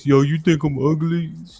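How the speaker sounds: put-on dumb, dopey voice. Mocking guys who ask a woman if she finds them ugly, in a doofy voice. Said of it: "Then he got the doofy voice".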